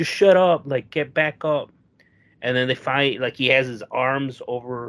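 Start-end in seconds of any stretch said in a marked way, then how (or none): 0.0-1.7 acted-out yell, shouting. Telling a story, acting out a man's reply to a complaint about sore knees, retelling a yell. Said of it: "he's like yelling".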